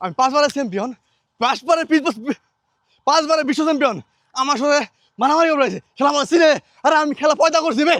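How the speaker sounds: high, loud, boastful bragging shout.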